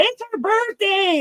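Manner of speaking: very high-pitched, acted-out screaming. Retelling how a friend called out at a comedy show: imitating a friend screaming. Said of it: "my friend screams out".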